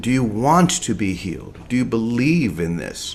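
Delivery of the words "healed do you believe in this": ordinary talk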